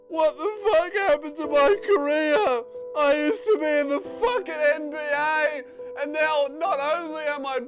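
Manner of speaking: mock very loud, drawn-out, self-pitying wailing sob. Narrating a fighter losing on the ground, imitating someone crying. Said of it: "it looks like he's just decided to cry".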